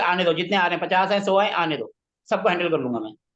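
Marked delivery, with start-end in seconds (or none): none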